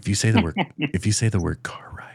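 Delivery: hushed, whispered. Saying a word so someone in the basement won't hear, whispering. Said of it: "I'm going to wh- kind of whisper it".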